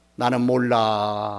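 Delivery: low, slow, indifferent, dismissive delivery.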